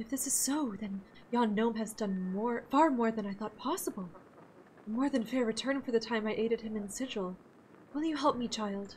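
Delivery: soft, earnest and anxious yet gracious. Leader of a traveling acting troupe asks a young traveler for help, gracious, earnest, worried.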